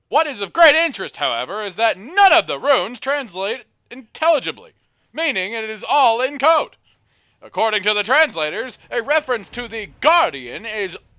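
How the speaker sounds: booming, shrill, very loud, very high announcer voice. Reading a text aloud after being told to, in an announcer voice. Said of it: "Get your announcer voice".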